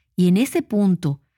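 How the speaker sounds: plain reading voice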